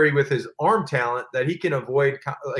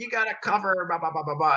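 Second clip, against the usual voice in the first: put-on, loud, rousing yelling rant; 4 semitones higher, 5 dB quieter than usual. Retelling a teammate yelling at the kickoff group: imitating Tom Brady yelling. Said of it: "he'd start yelling at us".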